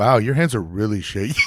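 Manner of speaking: put-on earnestly surprised tone. Retelling a remark about shaky hands: imitating someone earnestly surprised. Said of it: "the way he said it, 'cause he was earnestly surprised".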